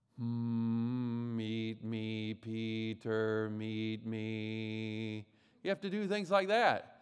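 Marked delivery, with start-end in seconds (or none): 0.2-5.3 very slow nasal buzz, "me" drawn out. Teaching a speaking exercise: nose and cheek buzzing resonance. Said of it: "You try to speak in a way so that your nose and your cheeks vibrate".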